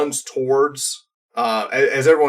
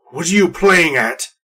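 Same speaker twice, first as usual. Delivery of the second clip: very gruff, rough female half-orc voice; 3 semitones higher, 3 dB louder than usual. Game master voicing a half-orc woman answering a persuasion attempt, gruff female half-orc voice. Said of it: "Very gruff female half-orc voice".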